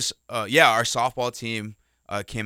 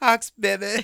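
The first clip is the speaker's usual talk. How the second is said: put-on high-pitched, innocent young child voice; 11 semitones higher, 4 dB louder than usual. Retelling a cute boy of about six cheering for his team: imitating a kid's high innocent voice. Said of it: "real high pit and innocent voice".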